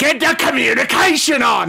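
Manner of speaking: very high, raspy, rough screaming voice. Voicing Gizmek ordering the bridge crew to hail a ship: Gizmek screaming orders. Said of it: "as Gizmek's screaming at the people".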